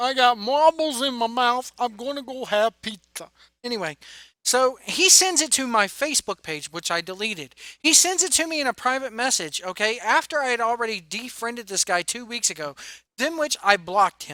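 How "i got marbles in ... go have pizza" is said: put-on, mocking New York accent. Mocking a guy who talked in a New York accent, with a mocking New York accent. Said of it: "talking like this, Rick, with that New York accent".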